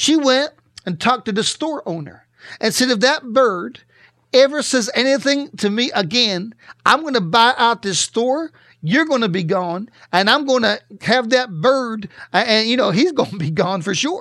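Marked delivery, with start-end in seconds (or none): none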